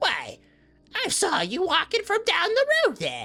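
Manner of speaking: put-on very high, swooping elderly woman character voice. Game master voices an old woman on a rocking chair, greeting the player: old woman character voice. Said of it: "an old woman sitting outside on a rocking chair".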